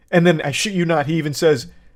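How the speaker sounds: normal talking voice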